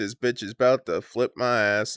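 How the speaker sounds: normal talking voice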